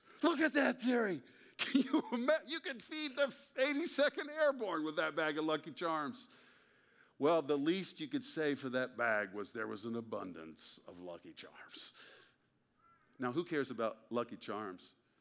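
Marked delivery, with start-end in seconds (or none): 0.2-6.3 play-acted, very high, swooping, thrilled, excited exclamation. Retelling a friend calling his wife over in a store: imitating an excited friend. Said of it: "she thought he had stumbled onto a gold mine".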